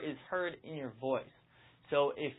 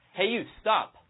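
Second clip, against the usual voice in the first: pitch dropping down on stop; 4 semitones higher, 5 dB louder than usual. Showing how a command sounds: falling pitch on stop. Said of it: "It goes down at the end".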